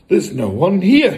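deeply relieved. The father, finding the room empty, speaks greatly relieved. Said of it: "greatly relieved".

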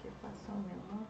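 soft, low, hushed voice.

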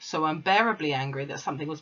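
ordinary delivery

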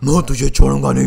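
menacing, threatening villain voice.

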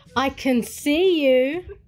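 sassy, cheeky tone. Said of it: "Was that sassy enough?".

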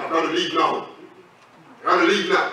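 rough, coarse, roughened put-on voice. Retelling how a young lady suddenly spoke: imitating a rough voice. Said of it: "a rough voice in her said".

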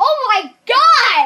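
loud, drawn-out yell. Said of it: "You shouldn't yell that".

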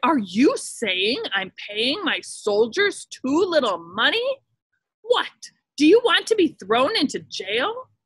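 furious, enraged, demanding voice. Narrator reads an emperor answering an official's suggestion, in a furious rage. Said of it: "the emperor flew into a furious rage".

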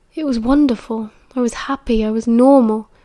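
ordinary delivery

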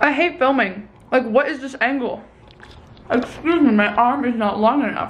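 talking with mouth full of food. Filming a vlog while eating a piece of toast, talking with mouth full. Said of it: "just me talking with my mouth full".

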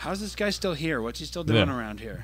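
ordinary talk, nothing marked

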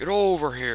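fighting-game ninja style voice. Playing a game and saying the line anyway, Scorpion impression. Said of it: "That was my best Scorpion impression".

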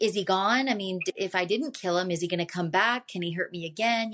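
usual speaking voice

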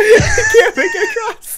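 very high, words broken up by laughter. Teasing another player who keeps failing a jump, laughing while talking. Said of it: "I'm laughing too hard to think".

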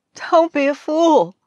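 very high, drawn-out, laughing through the words. A wife hears her glum husband's account and answers him, laughing. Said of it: "she laughed".

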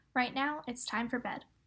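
ordinary delivery

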